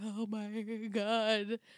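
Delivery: put-on blubbering like a little baby. Retelling a show scene, imitating Marcus blubbering like a baby. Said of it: "Like a little baby blubbering".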